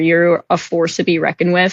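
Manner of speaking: ordinary talk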